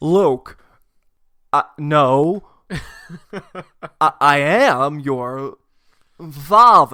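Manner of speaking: very loud, halting, quirky stop-start bursts. Doing Darth Vader's line to Luke in another actor's voice, as a Christopher Walken impression. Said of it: "I went with Christopher Walken".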